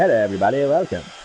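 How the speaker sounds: put-on old-time 1920s radio announcer delivery. Recalling voiceover work, trying out a welcome like a 1920s radio host. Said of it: "like a 1920s radio host".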